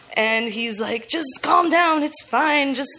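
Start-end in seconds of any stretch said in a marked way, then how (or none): none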